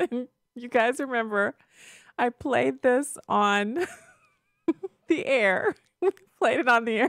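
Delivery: talking through laughter. A host, unable to stop laughing, recalls a clip played on air, laughing while talking. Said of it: "I just can't stop laughing".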